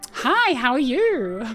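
animated customer service voice. Convenience store clerk mimics how everyone sounds at work, animated customer service voice. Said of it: "everyone's customer service voice is like".

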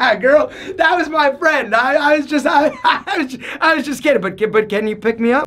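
flustered, stammering, laughing, sheepish delivery.

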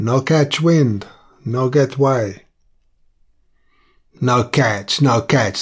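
obstinate, stubborn tone. A seaman glances over his shoulder at the sea and answers in an obstinate tone. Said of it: "said in an obstinate tone".

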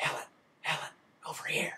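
soft, breathy, hushed whispered call. Retelling a movie's last scene, a voice calling from darkness: imitating a whisper. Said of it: "He's whispering".

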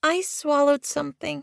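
very high, soft mumble under the breath. A young cat answering an older cat's question, mumbled. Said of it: "she mumbled".

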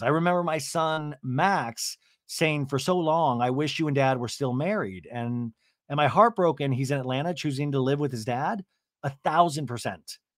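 normal talking voice

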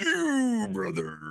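creaky, rough, raspy, very high pro-wrestler voice. Pointing at an enemy like Hulk Hogan: Hulk Hogan voice. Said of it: "I turn to him like Hulk Hogan".

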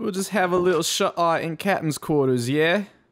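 put-on British accent. Going to bed in the game at nighttime: British accent. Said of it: "I don't know why I did a British accent just then".

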